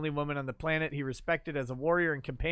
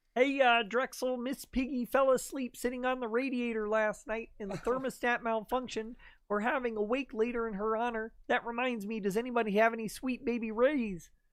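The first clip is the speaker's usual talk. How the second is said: high, pitched-up cartoon frog puppet voice; 8 semitones higher than usual. Reading out the last joke of the show in a Kermit the Frog voice. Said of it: "as Kermit the Frog".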